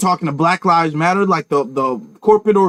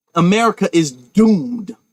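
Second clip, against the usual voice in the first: ordinary delivery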